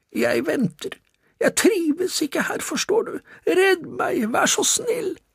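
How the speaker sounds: raspy, hoarse, very high-pitched falsetto. Narrator reading a story voices one of the charges: hoarse falsetto voice. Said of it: "med hes falsett stemme".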